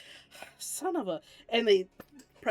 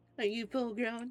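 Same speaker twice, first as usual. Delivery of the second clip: put-on cocky tone, higher pitch; 3 semitones higher, 4 dB quieter than usual. Repeating another player's taunt back, mimicking the cocky tone. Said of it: "I see we have a mockingbird in here".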